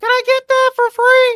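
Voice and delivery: very high, loud, squeaky voice. Imitating a man asking for something at a garage sale, in a loud Mickey Mouse voice. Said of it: "With his loud Mickey Mouse voice".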